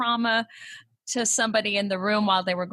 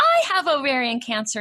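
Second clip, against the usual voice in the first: mock-cheery voice, much higher and louder; 5 semitones higher, 5 dB louder than usual. Retelling what a woman at the gym told the speaker, imitating a cheery voice. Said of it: "in this very cheery voice".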